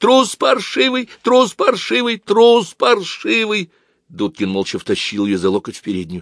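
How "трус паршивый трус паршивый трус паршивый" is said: very high, tearful, weeping shout. Aglaya runs onto the landing after a man fleeing downstairs: shouting in a tearful voice. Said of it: "крикнула она плачущим голосом".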